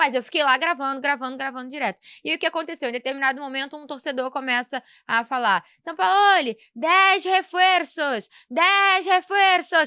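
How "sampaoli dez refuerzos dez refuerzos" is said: put-on loud, very slow, drawn-out yell. Retelling what a fan at the stadium yelled: imitating a fan shouting. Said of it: "gritando isso".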